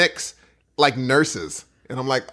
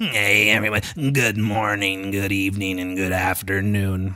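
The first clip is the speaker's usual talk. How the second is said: low voice of a damaged throat; 5 semitones lower than usual. Showing how a busted trachea would sound, damaged-throat South Park voice. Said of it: "channeling uh, South Park".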